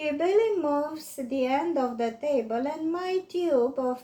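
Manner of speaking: plain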